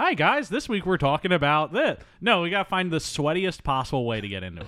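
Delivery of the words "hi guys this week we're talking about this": mocking, dull, bland podcast-host voice. Podcast host showing how generic podcasts open, mocking a bland podcast intro. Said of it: "some bullshit-ass podcast that just starts something like".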